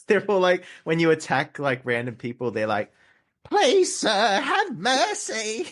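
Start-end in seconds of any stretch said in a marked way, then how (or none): 3.5-5.7 put-on ugly Cockney accent, very high, very slow. Describing vampire game characters begging when attacked, in an ugly british voice. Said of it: "ugly British voices".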